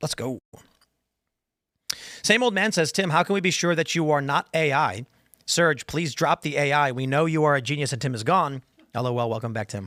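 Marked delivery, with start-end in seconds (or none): none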